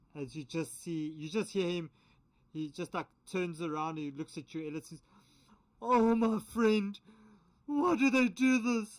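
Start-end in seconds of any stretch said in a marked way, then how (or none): 5.9-9.0 put-on sounding very drunk, higher and louder. Voicing a charmed character who turns to a player: really drunk guy voice. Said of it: "like those really drunk guys that sounds like".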